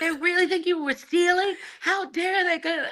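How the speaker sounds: put-on very high-pitched, furious, indignant outburst. Retelling how a partner reacted to store staff, imitating an angry partner. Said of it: "he was so angry".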